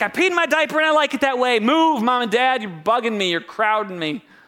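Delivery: loud, griping, ticked-off put-on baby voice. Imitating a three-month-old baby just woken from a nap: imitating a ticked-off baby. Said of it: "he's so ticked when he wakes up".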